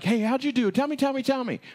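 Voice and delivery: mock very high-pitched, rushed, excited eagerness. Retelling a parable, acting out the master: imitating an excited master. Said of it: "really excited".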